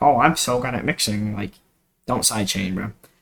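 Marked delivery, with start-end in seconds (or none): 0.0-1.3 smug, conceited, self-satisfied bragging tone. Mocking a producer with a high ego who boasts: mocking a smug, egotistical producer. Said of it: "have a high ego and think you're, like, the greatest".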